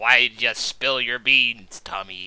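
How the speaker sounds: eerie, low whisper. Retelling a film scene, imitating Willem Dafoe's whisper. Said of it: "William Dafoe whisper".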